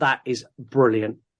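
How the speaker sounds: ordinary delivery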